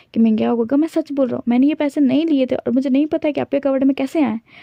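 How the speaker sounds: weeping, tearful, pleading voice. Retelling a story where a character pleads innocence: imitating someone crying. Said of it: "वो रोते बोलता है".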